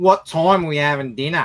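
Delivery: put-on child's voice with a thoroughly strong Australian accent. Parent mimics their kid turning to speak to them; imitating kid's Australian accent. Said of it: "My kids sound more Australian than I do".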